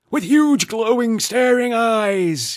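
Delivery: shrill, high, loud bellow, "eyes" drawn out. Reading a story, voicing Grandad suddenly waking to scare Katie: bellowing. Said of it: "Grandad bellowed".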